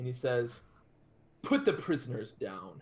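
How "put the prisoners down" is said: commanding armored orc war-chief voice. Narrator voicing an armored figure taken for the war chief, in a loud booming voice. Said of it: "he speaks in this loud, booming voice".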